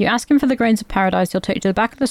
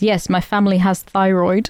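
mock, stilted, stiff line reading; 3 semitones higher than usual. Retelling a line a movie character says, imitating stilted delivery. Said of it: "he does this very stilted".

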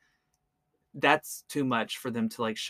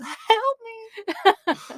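very high, mock pleading squeal. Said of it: "Oh, yeah, like".

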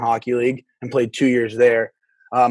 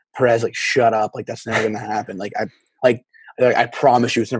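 plain

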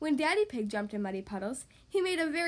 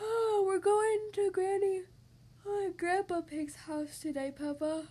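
drowsy, sleepy, slow and unhurried, pitched up; 6 semitones higher than usual. A narrator reads Mummy Pig's early-morning reply to Peppa, sleepily. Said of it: "replied Mummy Pig sleepily".

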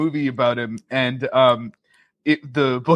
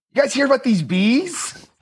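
very high-pitched, sincere, earnest questioning voice; 10 semitones higher than usual. Showing your own take on him as a teacher in The Happening, a Mark Wahlberg impression. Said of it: "I also have a Wahlberg in The Happening".

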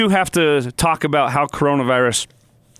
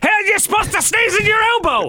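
mock very high, shrill screaming and yelling. Retelling how he yelled at the radio after hearing a remark, retelling a yell. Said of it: "I was yelling, screaming at the radio".

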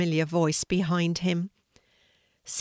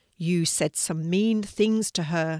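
usual speaking voice

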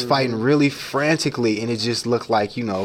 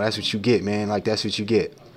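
mock taunting laughter, lower; 3 semitones lower than usual. Retelling handcuffed men beside a stabbed man: imitating men laughing. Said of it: "they're kind of laughing like".

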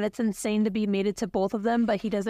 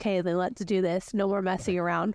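ordinary delivery

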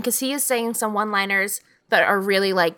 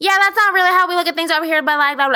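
mock high yell, all in one breathless run; 9 semitones higher, 5 dB louder than usual. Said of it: "and it's all yelled".

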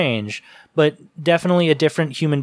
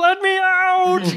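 very high little froggy voice, stretched out. Show how John Depp sounds in this movie, with a pseudo Kermit impression. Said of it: "like kind of like a little froggy".

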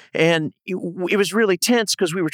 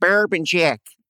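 put-on broad Minnesota accent. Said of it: "some good Minnesota accent right there".

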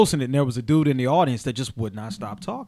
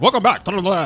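fast put-on auctioneer-style announcer voice; 5 semitones higher, 4 dB louder than usual. Imitating the announcer at the start of a podcast; auctioneer-style announcer voice. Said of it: "he talks like an auctioneer".

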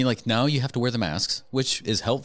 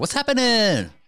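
very high, excited, cutesy kawaii-style voice; 6 dB louder than usual. A co-host shows how the podcast greeting should sound: excited. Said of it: "you got to sound like you're excited to be here".

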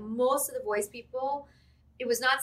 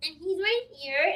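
put-on high, pitched-up cartoon kid voice; 8 semitones higher than usual. Speaker showing how the character Tommy Pickles talks: Tommy Pickles voice. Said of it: "Tommy Pickles sort of talks like this".

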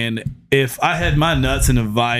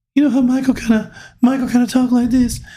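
very high-pitched, rapid speech; 13 semitones higher than usual. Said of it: "You're not near as quiet".

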